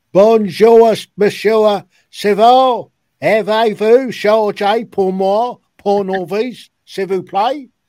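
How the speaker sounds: high, slow, drawn-out, far-carrying shout. Retelling shouting a French greeting across a yard: retelling a shout across a yard. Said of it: "as I shouted across".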